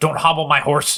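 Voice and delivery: hostile, aggressive delivery. Telling listeners which phrase to say to get a prize, the speaker says it aggressively. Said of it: "do you have to say it aggressively".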